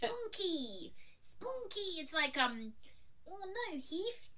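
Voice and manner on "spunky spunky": cartoonish Australian accent, much higher. Discussing non-Australians doing Australian accents: Rocko's Modern Life Aussie accent. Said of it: "They basically do the Rocko's Modern Life version".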